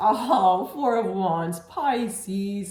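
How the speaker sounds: high, loud, tearful, joyful outburst.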